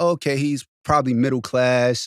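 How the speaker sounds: ordinary delivery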